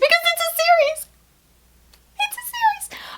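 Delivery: very high, abnormal, excited squealing voice. Announcing that a new book is part of a series, strange excited voice. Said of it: "the voice I just made was not normal".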